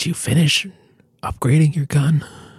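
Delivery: hushed whisper. In a role-play scene, leaning over to another character, whispering. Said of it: "I whisper in his ear".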